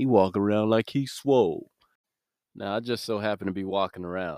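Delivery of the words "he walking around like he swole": louder, mocking gossip voice. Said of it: "That's exactly how he said it".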